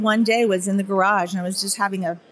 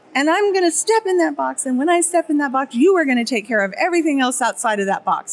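high-pitched, crying, sobbing, tearful insistent tone; 5 semitones higher than usual. Recalling what she said while screaming and crying, retelling her crying speech. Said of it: "And I'm like sobbing and I'm crying".

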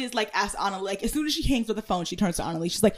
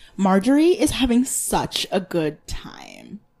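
very slow, condescending, swooping sing-song, drawn out; 2 semitones lower, 4 dB louder than usual. Imitating someone constantly commenting on others: imitating condescending commentary. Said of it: "It's so condescending".

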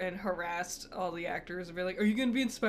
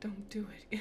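very quiet whisper under the breath; 8 dB quieter than usual. Retelling what they said to the person beside them wearing headphones, very quiet whisper. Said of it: "I very quietly to myself and to you went".

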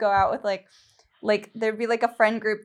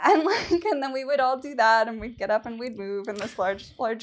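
usual speaking voice

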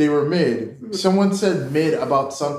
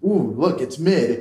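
imitated whisper. Retelling what a companion whispers while walking: imitating a whisper. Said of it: "he just whispers to me".

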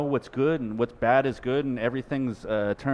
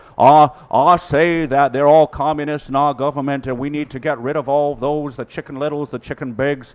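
very loud, exaggerated, full cartoon voice; 2 semitones higher, 8 dB louder than usual. Quoting a man's call for revolution in a Foghorn Leghorn voice. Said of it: "he says it in his foghorn leghorn voice".

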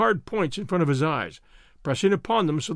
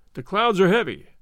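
plain reading voice

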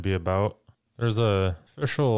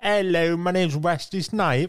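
poor put-on British accent, pitched higher; 9 semitones higher than usual. Joking about an actor attempting a British accent: Wesley Snipes doing a bad British accent. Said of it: "Wesley Snipes couldn't do a British accent".

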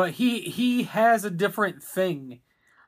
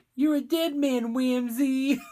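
put-on child's voice, much higher pitch; 6 semitones higher than usual. Recalling a movie bounty hunter, the speaker quotes Undertaker in a child's voice. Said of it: "it's like a child saying it".

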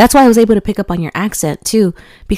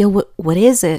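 usual speaking voice

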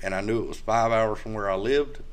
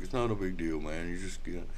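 mock-calm, much quieter put-on delivery; 4 semitones lower, 7 dB quieter than usual. Speaker retelling how a man answered his worries, imitating a calm reply. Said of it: "he's all calm".

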